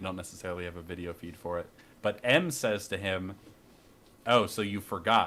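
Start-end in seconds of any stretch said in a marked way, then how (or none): 4.3-5.3 mock passive-aggressive, slower. Retelling what one person said to another about forgetting, mock passive-aggressive. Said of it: "Like really passive aggressive".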